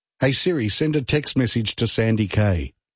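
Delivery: plain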